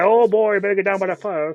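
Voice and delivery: loud, slow, put-on Cajun drawl. Quoting a bad action movie character: Wilford Brimley Cajun accent. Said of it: "He's a Cajun man".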